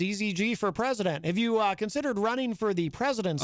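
ordinary talk

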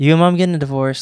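mock casual, offhand, nonchalant kid voice. Retelling what the kid in the movie says: imitating a nonchalant kid. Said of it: "so nonchalant".

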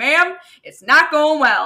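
put-on very loud, broad, strong Southern accent. Retelling a work phone call, imitating the man's super Southern accent. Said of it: "he has super southern accent".

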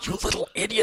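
harsh, scolding whisper-shout, kept hushed. Showing how you whisper-yell at your kids: mock whisper-yelling. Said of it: "when you whisper yell at 'em".

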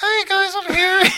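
very high voice, like an earlier one. Prompted by another speaker, retelling an arrival in their old voice. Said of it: "do your old voice".

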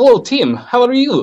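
English with Russian accent. Testing an accent for someone born in the former Soviet Union, in a Russian accent. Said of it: "I do a Russian accent".

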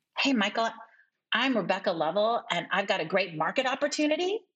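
question-like rising pitch at end of opportunity. Introducing herself and a market opportunity to Michael: rising uptalk at phrase end. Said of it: "that uptalk, which is a real habit".

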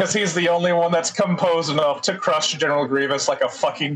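ordinary delivery

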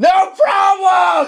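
mock, very high-pitched shouted yelling. Showing how to answer a cop after getting pulled over, yelled answer. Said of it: "Just yell".

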